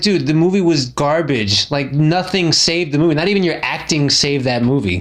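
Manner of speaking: ordinary delivery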